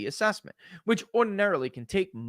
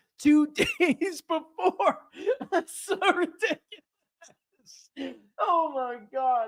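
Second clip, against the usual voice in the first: talking through laughter, higher pitch; 14 semitones higher, 3 dB louder than usual. Reacting to a compressed review timeline, laughing while talking. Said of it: "I'm laughing, but it's not funny".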